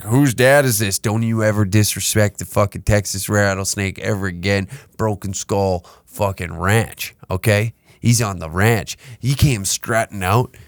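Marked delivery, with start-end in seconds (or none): none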